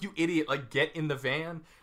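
ordinary delivery

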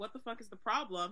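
ordinary talk

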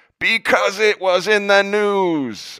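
exasperated, frustrated yell, very high and very loud. A father retells answering his young daughter in the car, retelling a frustrated shout. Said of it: "I shouted at her".

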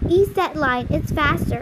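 usual speaking voice

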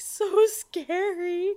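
put-on high, slow, scared little kid whimper.

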